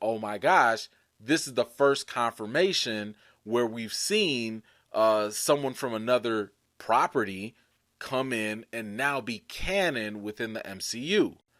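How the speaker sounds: ordinary talk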